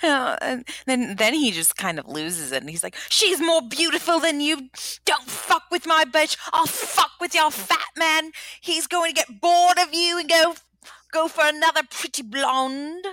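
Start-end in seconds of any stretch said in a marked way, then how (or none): 3.1-13.0 bad, poor, pitched-up put-on English accent. Retelling what a man said when he lost it, in a bad English accent. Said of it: "That's not a good accent".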